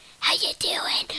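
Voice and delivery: whispering put-on character voice. Showing off different voices on a podcast, in a whispering munchkin voice. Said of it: "I'm the whispering munchkin".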